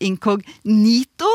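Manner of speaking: inkognito with stress on third syllable ni. Explaining a common pronunciation, stressing the third syllable of inkognito. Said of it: "Inkognito med trykk på tredje stavelse".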